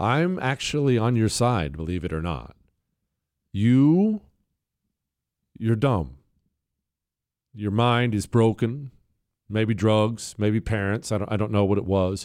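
gentle, mock loving voice. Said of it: "that's my loving voice right there".

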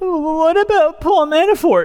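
very high, grasping, flustered tone. Retelling how a man on his phone could only come up with one question, imitating someone so tilted. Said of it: "and literally in this tone".

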